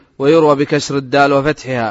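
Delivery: plain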